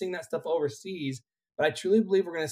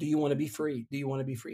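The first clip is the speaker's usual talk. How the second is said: soft, hushed half-whisper spoken very close; 3 semitones lower, 7 dB quieter than usual. Retelling words once half-whispered into her ear: retelling a half-whisper. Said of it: "then I whispered in her ear".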